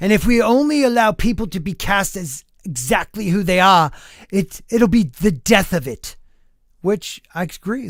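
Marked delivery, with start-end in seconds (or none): 0.0-6.2 convincing imitated British accent. Reading a film actor's quote aloud: great British accent. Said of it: "my great British accent".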